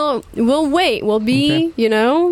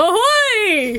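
high, long, drawn-out shout with "ahoy" stretched; 9 semitones higher than usual. Voicing a character who shouts back to pirates: shouting back. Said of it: "Octavia will shout back".

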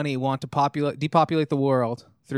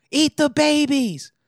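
put-on scream, pitched higher and louder; 13 semitones higher, 5 dB louder than usual. Retelling a woman screaming at a public forum: imitating someone screaming. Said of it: "this chick started screaming".

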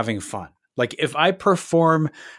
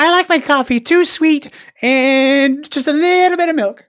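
very high, loud, squeaky puppet voice, stretched "and"; 13 semitones higher, 5 dB louder than usual. Answering a quick-fire question on request, speaking in Elmo voice. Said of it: "Using your Elmo voice".

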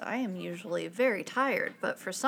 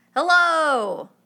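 very loud, high-pitched shout; 6 semitones higher, 12 dB louder than usual. Testing the mic after being asked to talk really loud: talking really loud. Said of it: "Talk really loud".

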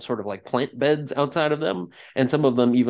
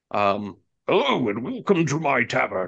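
massive, hulking giant voice. A Goliath greets newcomers entering his tavern: hulking Goliath voice. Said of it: "says in a hulking voice".

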